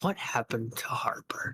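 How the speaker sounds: close, soft, breathy whisper. Narrating a game scene, the speaker voices someone whispering in a player's ear. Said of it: "a whisper in your ear".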